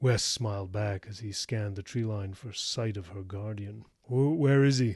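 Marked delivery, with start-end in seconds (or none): 4.1-5.0 uneasy, anxious, nervous, raised voice. Wes asks about her guardian while scanning the tree line, nervous question. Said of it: "he asked nervously".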